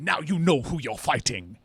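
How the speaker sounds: put-on vaguely English, sword-and-sandal epic movie accent. Mocking the accent in ancient epic films, the speaker imitates Brad Pitt; Brad Pitt epic-movie accent. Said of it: "a unique accent to movies made about like Odysseus and Troy".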